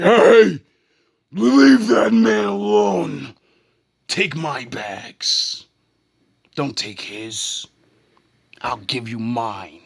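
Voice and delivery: booming, very loud, slow, drawn-out commanding voice. Retelling stepping in to stop a fight at work: own [name] voice. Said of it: "I use my [name] voice and say".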